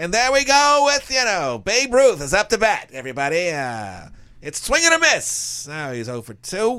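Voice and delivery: high, loud 1920s-style baseball announcer voice. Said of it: "nineteen twenties baseball announcer style".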